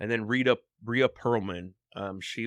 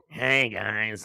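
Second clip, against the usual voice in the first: raspy impression voice. Describing an actor from The Little Rascals, the speaker is imitating a raspy Little Rascals voice. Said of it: "has that really like raspy voice".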